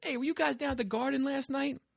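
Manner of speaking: put-on high, heavy, laid-on New York man's accent. Retelling a man who asked the band a question, doing a super New Yorker guy voice. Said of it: "it was like a super New Yorker guy".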